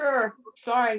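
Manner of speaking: talking with mouth full. Greeted on joining a call, answering the host while talking with mouth full. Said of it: "I have my mouth full".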